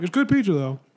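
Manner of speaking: talking with mouth full while eating. Chatting with others about pizza, eating while talking. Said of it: "I'm eating pizza right now, so my voice sounds weird".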